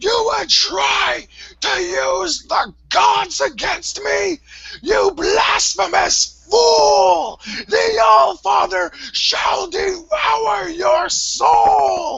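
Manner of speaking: unhinged, frantic ranting near hysterics. Narrating the scene, the speaker voices Tron as his screams reach hysterics. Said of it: "still in screams, are getting to the point of hysterics".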